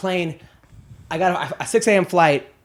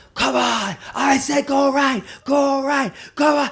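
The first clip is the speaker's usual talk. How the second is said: high, angry, screaming coach voice; 9 semitones higher than usual. Describing the other team's coach yelling at his kids: imitating a screaming coach. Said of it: "He's screaming at his kids like".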